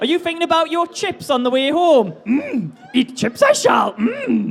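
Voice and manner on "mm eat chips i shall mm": slow, drawn-out, swooping character voice. Teasing a contestant about chips: Yoda voice. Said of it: "more Yoda impressions".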